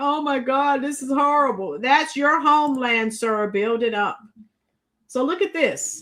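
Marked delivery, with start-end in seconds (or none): 0.0-1.8 weepy, blubbering, crying, sobbing voice. Retelling what a guy said last night: imitating someone crying. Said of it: "He was crying".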